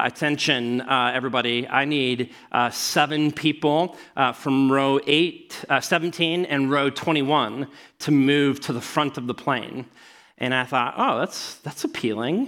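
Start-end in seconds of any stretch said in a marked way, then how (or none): none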